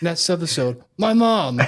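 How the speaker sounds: strongly emphatic delivery. Imitating how a character ends each episode: imitating an emphatic character. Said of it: "he just says it, like, so emphatically".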